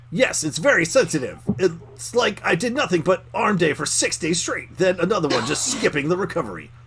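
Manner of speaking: anime-style announcer delivery. Reading out a character's reply to the others in an anime announcer voice. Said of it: "anime announcer".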